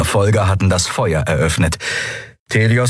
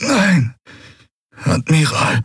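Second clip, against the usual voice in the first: high, strained, pained groan of a wounded man; 8 semitones higher than usual. The bleeding commander Quailur answers the Admiral's question, groaning in pain. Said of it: "ächzte Quailur".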